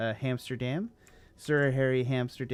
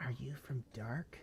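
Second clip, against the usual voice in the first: very hushed stage whisper, slow, loud, pushed hard; 15 dB quieter than usual. Voicing a club member who leans in: loud whisper. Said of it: "whispers in your ear really loud".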